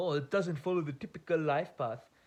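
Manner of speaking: put-on light Indian accent, lightly applied. Speaker voices their aunties' reaction, in a mild indian accent. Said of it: "I say that in a mild Indian accent".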